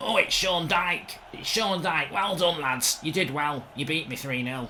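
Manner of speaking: catty, mocking, sarcastic flattering tone.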